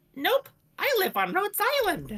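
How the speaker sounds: very high, shrill, swooping squeal. Voicing a character met alone in a forest: shrill character voice. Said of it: "this is how her voice sounds like".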